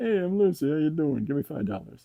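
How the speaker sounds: loud, high put-on pet voice. Introducing the cat to viewers and speaking for her: voicing Lucy the cat. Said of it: "That's not what she sounds like".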